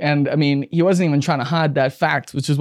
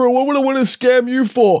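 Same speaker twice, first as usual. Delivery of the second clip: very high-pitched mock ranting outburst; 9 semitones higher, 3 dB louder than usual. Speaker reenacts a man going off after being accused of a scam. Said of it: "starts going off".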